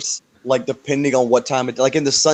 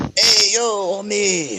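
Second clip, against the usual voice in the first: fake Mexican accent, higher pitch; 7 semitones higher than usual. Acting out a movie scene in blackface for laughs: put-on Mexican accent. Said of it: "came out with a Mexican accent".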